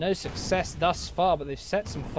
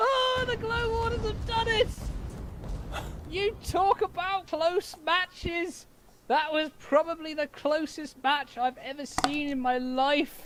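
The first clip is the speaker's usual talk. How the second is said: wild, rabid parrot-like squawking voice; 12 semitones higher than usual. Watching the glow warders win a close match, sounding like a rabid parrot. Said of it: "sorry for sounding like some sort of rabid parrot".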